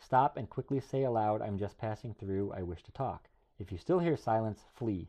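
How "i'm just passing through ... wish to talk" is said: ordinary talk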